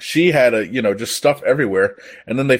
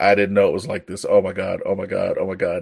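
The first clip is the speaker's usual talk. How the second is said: mock crying, lower pitch; 4 semitones lower, 3 dB quieter than usual. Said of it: "crying and shit".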